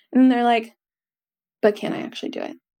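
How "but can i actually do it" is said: soft, breathy, doubting small whispered voice. Acting out a question many people ask, saying it softly. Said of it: "I'm saying it softly".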